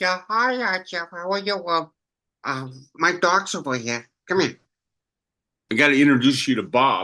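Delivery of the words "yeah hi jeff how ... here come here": cartoon wildcat critter character voice. A voice actor greets interviewer Jeff as the Wildcat would, in Wildcat voice. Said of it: "I think the Wildcat would say".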